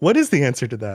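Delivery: ordinary delivery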